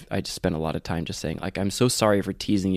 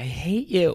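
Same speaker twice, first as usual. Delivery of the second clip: mock crying scream, much higher, slower; 10 semitones higher than usual. Recalling relentlessly teasing Canyon until he screamed back, imitating Canyon screaming, crying. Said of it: "just crying and looked at me and just like screaming at me like".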